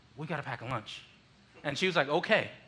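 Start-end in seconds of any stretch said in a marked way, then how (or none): 0.2-1.0 secretive, hushed, low, very quiet half-whisper. Recalling going up to their mom with a request, half-whispering. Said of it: "I had to whisper".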